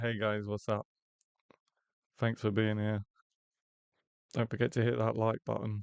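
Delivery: gloomy, unhappy, miserable, glum delivery. Demonstrating a greeting to viewers said in a miserable tone. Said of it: "be a miserable, like".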